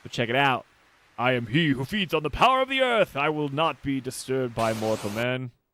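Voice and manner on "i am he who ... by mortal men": voice-acted, swooping lich villain boss voice. Reading a boss's lines aloud while showing the game: voice acting a lich boss. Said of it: "My voice acting".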